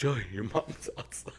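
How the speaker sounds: put-on tone broken up by laughter. Retelling how a friend warned him his mom was outside: imitating laughing while talking. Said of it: "This was laughing".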